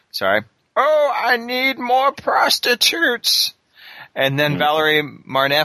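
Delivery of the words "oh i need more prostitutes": put-on slow, drawn-out, very high old man voice. Imagining a video game where you play as Hulot, old man voice as Hulot. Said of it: "and be all like old man voice".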